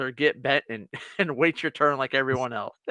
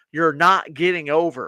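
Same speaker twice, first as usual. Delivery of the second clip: loud, forceful, acted-out raised yell; 3 semitones higher, 5 dB louder than usual. Retelling yelling through the car window at a driver trying to get over: retelling a yell. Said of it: "and I'm yelling at him".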